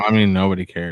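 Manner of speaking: normal talking voice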